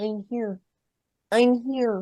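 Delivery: tiny soft voice, very drawn out and slow. Showing how a football player sounds, in Patrick Mahomes's little Kermit voice. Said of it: "His little Kermit voice".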